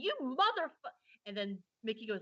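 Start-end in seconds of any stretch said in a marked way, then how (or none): 0.0-0.9 very high-pitched, raging screech. Speaker retells someone in the back starting to scream, retelling a rage screech. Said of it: "about to start screeching".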